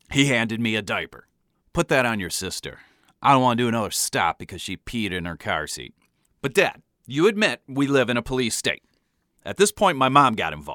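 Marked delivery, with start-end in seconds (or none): none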